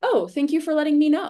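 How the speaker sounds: high, loud, gracious, grateful tone. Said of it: "have the grace to be like".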